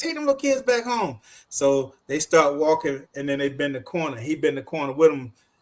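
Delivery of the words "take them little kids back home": mock high, raised hollering yell. Retelling how a man in a car yelled at kids: retelling a man yelling. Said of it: "He yelling".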